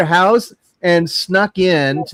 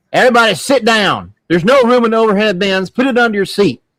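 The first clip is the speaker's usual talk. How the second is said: put-on rude, nasty Southern accent, no niceness; 4 semitones higher than usual. Retelling what a nasty flight attendant said: imitating a rude Southern accent. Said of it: "this old lady with that real Southern accent".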